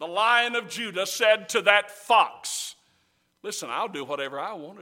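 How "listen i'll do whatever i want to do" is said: play-acted, sneering, sarcastic delivery. Retelling a preacher's version of a defiant reply: acting out sarcastic words. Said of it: "it's just sarcasm".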